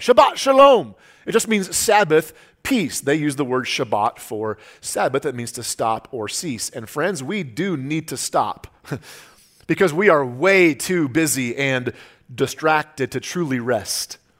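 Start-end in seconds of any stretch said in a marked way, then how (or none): 0.0-0.9 high, loud Israeli-style delivery. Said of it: "they'll say".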